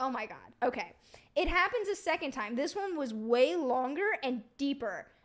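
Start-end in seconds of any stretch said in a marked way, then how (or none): 0.0-0.9 frightened, flustered and panicked. Retelling hiding under the covers in bed at night: mock-panicked. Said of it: "So I'm panicking and I'm like".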